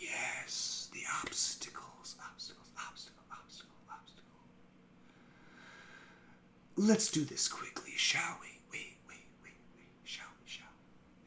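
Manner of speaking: whispered voice, faintly echoing. A game master voices a tiefling speaking inside the players' heads, echoing telepathic voice. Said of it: "And it just echoes almost".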